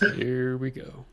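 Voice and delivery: very quiet, hushed murmur under the breath. Speaking in character after someone says it can't get worse: very quiet. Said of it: "Just very quietly".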